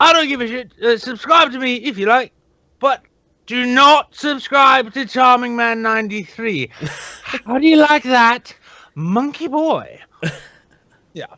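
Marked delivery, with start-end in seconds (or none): 0.0-10.0 very high-pitched, taunting voice pushed way up. Retelling a video bit that makes fun of Charming Man, impersonating Wesley. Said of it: "impersonate Wesley".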